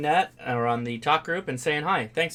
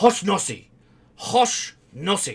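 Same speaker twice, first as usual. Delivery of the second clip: yelled in strong, put-on Japanese accent; 5 semitones higher, 5 dB louder than usual. Retelling how a man shouted a name to hand out papers, imitating how he sounded, in a strong Japanese accent. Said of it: "to a strong Japanese accented person".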